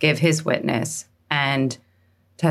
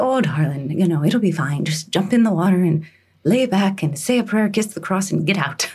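pitched-up Irish nun voice; 5 semitones higher than usual. Retelling what a nun said before the bath: imitating an Irish nun. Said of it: "this Irish nun, she says".

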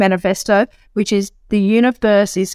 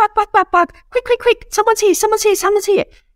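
very high-pitched yapping of a tiny dog; 13 semitones higher than usual. Explaining by analogy, speaker voices a small dog alerting at the door: yappy little dog voice. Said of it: "It's like the little yappy dog".

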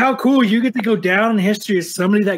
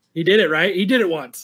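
usual speaking voice

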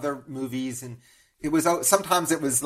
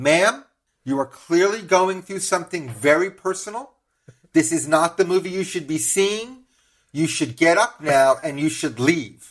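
put-on loud, clear, announcing voice; 3 semitones higher than usual. Retelling what a voice in the theater told a sobbing woman: imitating a loud, clear voice. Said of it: "a loud, clear voice comes from somewhere in the theater".

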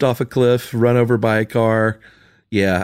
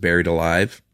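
ordinary delivery

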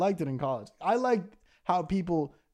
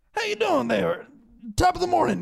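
put-on very high, crackly, creaky elderly voice; 13 semitones higher, 5 dB louder than usual. Ranting about Walmart greeters, imitating a very old greeter's greeting. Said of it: "They're like 94 years old. Be like".

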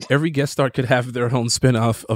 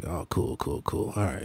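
mock-groggy, much lower, quieter voice; 6 semitones lower, 10 dB quieter than usual. Recalling early mornings on their show, doing a groggy Max impression. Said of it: "he'd be groggy and he'd say".

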